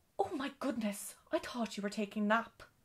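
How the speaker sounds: cross, annoyed, irritated. Cook, busy with pots and pans, answers Dorrie crossly. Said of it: "said Cook crossly".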